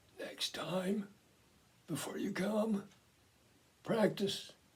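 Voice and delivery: faint, hushed, raspy whisper. Retelling what he said after motioning to bend close: imitating a quiet raspy voice. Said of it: "In a quiet and raspy voice".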